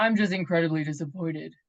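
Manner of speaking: low, dropped voice with a stern reprimanding tone. Retelling what a woman said when called about her appointment, imitating her voice dropping. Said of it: "her her her voice dropped".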